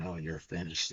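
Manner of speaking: acted nasty taunting tone. Retelling a show scene where the team owner speaks to another character, mimicking a nasty taunt. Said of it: "she was being all nasty".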